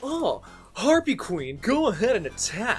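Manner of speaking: put-on anime duelist voice. Mocking a card game character ordering an attack: imitating Mai Valentine. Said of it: "she would always just be like".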